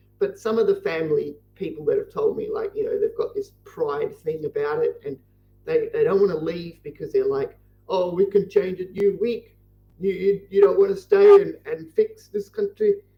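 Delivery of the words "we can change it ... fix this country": put-on South African accent. Quoting family members who refuse to leave the country, in a South African accent. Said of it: "so I can't do a good South African accent".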